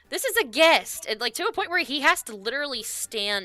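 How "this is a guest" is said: very high-pitched, shrill yelling. Recapping a scene where one character yells at another, retelling a yell. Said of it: "she literally starts yelling at her".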